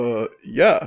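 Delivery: put-on heavy Polish accent. Retelling meeting a developer as a big fan; he answers: heavy Polish accent. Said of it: "in this super heavy Polish accent".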